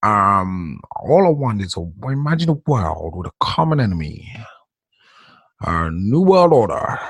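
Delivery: put-on low, deep, slow old-man voice. Recalling a president's words, doing a Bush Senior impression.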